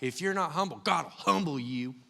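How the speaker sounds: put-on drawling Southern accent. Recalling what he was taught as a kid: Southern accent. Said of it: "Southern accent again".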